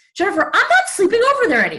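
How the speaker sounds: put-on very high little-boy voice. Retelling a morning phone call from dad: imitating dad sounding like a little boy. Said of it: "sounded like a little boy".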